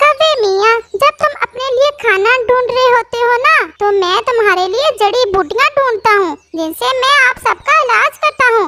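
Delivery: high, scolding cartoon parrot voice. Parrot healer telling the crow that medicine is no longer free: parrot healer character voice. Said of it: "जाने तोता इन तमाम पक्षियों का हकीम था, / चलो मैं देखता हूँ, / जाने तोता इन तमाम पक्षियों का हकीम था".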